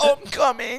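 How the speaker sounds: very high, loud put-on moan.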